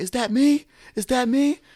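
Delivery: mock scream, very high-pitched and shrill. Retelling screaming at the crowd in the ring: imitating own screaming. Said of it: "screaming at the crowd".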